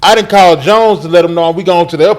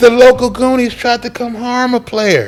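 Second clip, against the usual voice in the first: quiet, soft-spoken delivery with raised pitch; 6 semitones higher than usual. Imitating Jones, a soft-spoken friend, retelling his words: imitating Jones, soft-spoken. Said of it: "He talked like this".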